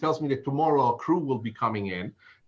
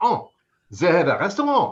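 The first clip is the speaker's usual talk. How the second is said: loud put-on French accent; 2 semitones higher, 5 dB louder than usual. Retelling the reply of the man who hired the speaker, French accent. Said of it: "I will do my best French accent".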